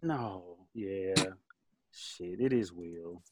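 low, quiet, deflated and beaten-down voice. In a group discussion, one speaker concedes the point, sounding defeated. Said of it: "you sound so defeated".

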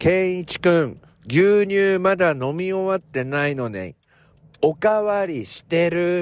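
loud, high tattling call-out. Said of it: "でかい声で言いつけたんですよ".

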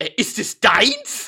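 high, completely perplexed, baffled, caught off guard. Retelling meeting a school friend who showed up with a child, retelling being completely perplexed. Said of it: "ich war völlig perplex und habe gesagt".

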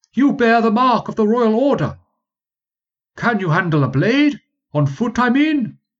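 very high near-shout, muffled. Narrator voices a helmeted recruiter calling to the rider again, almost shouting through a helmet. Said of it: ""[name] is my name. / He spoke to me again, / "[name] is my name. I'll relieve you of your duties, good sir. You've been enlisted for the 32nd. / he wore a great steel helmet, so large and so stiff, y".

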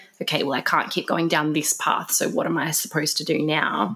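ordinary talk

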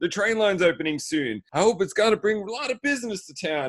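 high, taunting, over-the-top, acted sarcastic tone. Retelling someone mocking a man in conversation: retelling mocking sarcasm. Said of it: "he's just mocking him".

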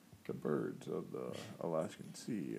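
deep, slow nature documentary narrator delivery. Imitating a nature documentary narration: Morgan Freeman narrator voice. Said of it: "Morgan Freeman's voice".

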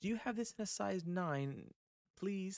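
put-on polite British accent, pitched a little high. Retelling how a woman asked him a question in her british accent. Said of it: "asking me in her British accent".

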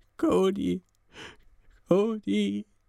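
high, tearful, broken stammer. Sam, bound to a chair with tears running down his face, speaks to himself: stammering to himself. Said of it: "stammelte er vor sich hin".

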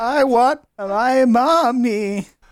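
small, scared voice, high and slow whimper. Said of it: "He shakes even more".

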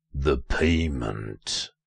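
deep voice, heavy with pain. Narrator reads a small cloaked figure peering out of a shed, deep, pained voice. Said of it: "it said in a deep, pained voice".

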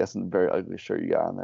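ordinary talk, nothing marked

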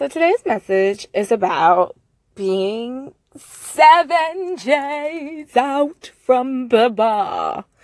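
very slow goofy drawl, j sounds stretched. Opening a message to the viewers in a put-on voice: goofy voice. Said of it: "my non-goofy [name] voice".

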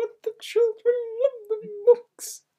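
very high, shrill, very loud lady voice. Telling someone they sound like the lady from Elf, doing a lady from Elf impression. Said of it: "You sound like the lady from the movie Elf, and she's like".

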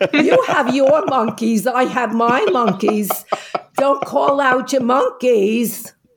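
put-on genuine New York accent. Retelling a woman standing up to a stuffy panelist, in a real new york accent. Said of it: "with a real New York accent".

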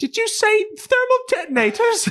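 very high, very loud, thin, shrill squeal. A voice over the comlink asks a question, in a shrill little voice. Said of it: "you hear this shrill little".

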